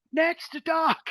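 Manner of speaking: mock yell, very high, shrill and carrying. Voicing a child on a passing boat: shouting. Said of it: "just shouts".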